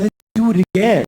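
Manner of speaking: put-on unsettling, creepy, eerie tone. Retelling what a partner said after sex: imitating a creepy voice. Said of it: "creepy like that".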